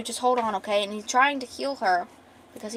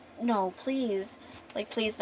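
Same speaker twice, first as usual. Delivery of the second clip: mock sobbing, pleading voice, quieter; 8 dB quieter than usual. Recounting the scene after she stops responding, retelling a sobbing plea. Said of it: "he starts sobbing and crying and begging".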